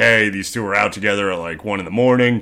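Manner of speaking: ordinary talk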